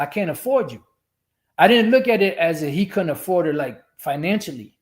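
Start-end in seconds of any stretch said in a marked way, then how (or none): none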